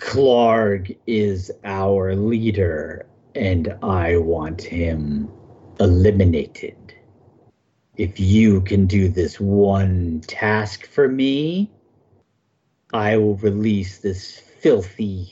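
low, guttural goblin growl. A game master voices a goblin holding a captive, offering a deal in a guttural, low goblin growl. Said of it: "the incredibly strong goblin is now holding the humanoid over the escarpment, / the incredibly strong goblin is now holding the humanoid over the escarpment, / The goblin turns to Finn, / and in a gut".

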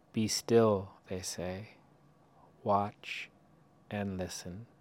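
slow, unhurried reading, each line given space. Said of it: "I'll read it slowly".

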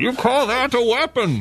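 menacing, taunting masked-villain voice. Doing a bit of Bane talking to Mark Wahlberg: Bane voice. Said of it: "What about Bane talking to Mark Wahlberg?".

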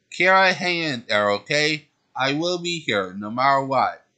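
plain

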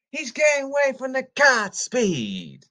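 very high, loud, swooping, sarcastic sportscaster-style call. Imitating a sportscaster's call of a long touchdown run: Gus Johnson play-call voice. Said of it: "make Gus Johnson say again".

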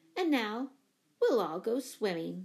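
ordinary delivery

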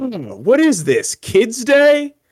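very loud, very high, shrill, sneering, disgusted scoff. Retelling what people said at the main gates, imitating a loud disgusted scoff. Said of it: "scoff quite loudly in disgust".

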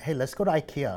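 usual speaking voice

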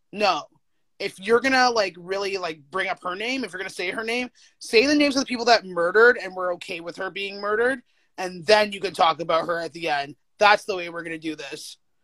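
ordinary delivery

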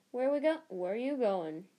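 sleepy. Reading a story aloud, the narrator voices a character's sleepy question. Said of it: "Said Ron sleepily".

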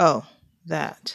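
with a smirking chuckle. The elemental replies to someone accusing him of hurting their best friend, chuckling. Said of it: "The elemental smirked and chuckled".

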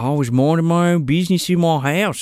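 put-on Australian accent. Trying an impression for the others: Sleepy Haggerty in Australian accent. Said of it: "Let me see if I can do Sleepy Haggerty in an Australian accent".

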